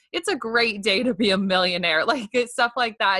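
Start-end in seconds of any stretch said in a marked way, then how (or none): none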